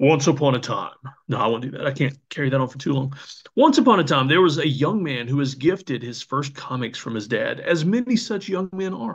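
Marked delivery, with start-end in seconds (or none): 0.0-0.9 epic, dramatic movie trailer announcer narration. Reading a comic-collection story aloud, movie trailer voice. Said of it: "I'll read it in my movie trailer voice".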